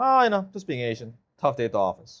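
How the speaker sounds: acted dry, straight-faced deadpan, voice dropped. Retelling a joke line to a sales prospect: imitating own deadpan delivery. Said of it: "I'll say it with a straight face".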